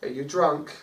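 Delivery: let-down, disappointed, reproachful motherly voice. Retelling how she looked up and asked: imitating a disappointed mum. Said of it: "the most disappointed mum thing".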